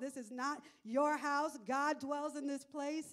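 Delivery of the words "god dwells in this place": normal talking voice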